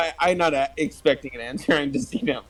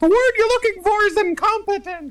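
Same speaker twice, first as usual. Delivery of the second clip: shrill, very high-pitched yell; 4 dB louder than usual. Player voicing Bob correcting another character's word choice, yelling out. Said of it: "Bob's gonna yell out".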